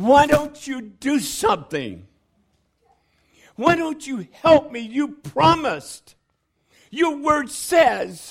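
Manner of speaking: put-on, high, demanding, pleading yell. Recalling past pleading with god, the speaker re-enacts yelling at god. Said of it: "I've yelled at God".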